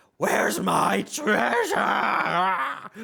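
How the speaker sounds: immense dragon's rough, rasping, high screaming roar. Voicing an immense dragon hunting below deck: screaming dragon voice. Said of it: "It screams and echoes across".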